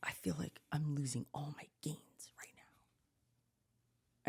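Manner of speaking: very slow, drawn-out, hushed whisper. Retelling what a hungry friend said into an ear: imitating someone whispering. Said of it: "he whispers in my ear".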